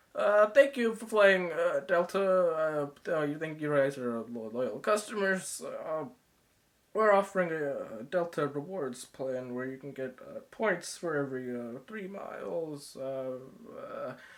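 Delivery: gloomy, mournful, slow, sad, melancholic announcer-style ramble. Retelling a pilot rambling on the intercom, imitating a sad, melancholic voice. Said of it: "keeps rambling on in this sad, melancholic voice".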